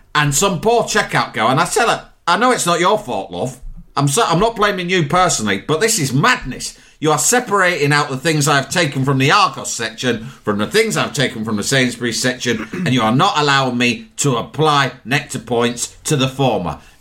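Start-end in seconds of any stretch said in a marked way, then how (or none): none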